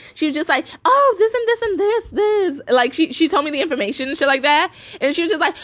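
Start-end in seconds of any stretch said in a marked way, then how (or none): 0.9-2.8 high, slow, drawling snooty put-on voice. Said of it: "in a really, like, snooty way".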